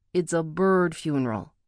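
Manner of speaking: ordinary delivery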